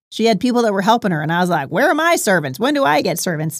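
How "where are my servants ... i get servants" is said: animated kids' cartoon voice swinging up and down. Retelling her own past complaint in a Larry from VeggieTales voice. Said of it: "said in my best, you know, Larry voice from VeggieTales".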